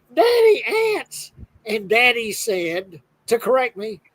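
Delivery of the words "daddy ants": play-acted very high, loud little child screaming. Recalling Daddy grabbing them near hornets as a kid, retelling a child's yell. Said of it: "I remember so clearly yelling".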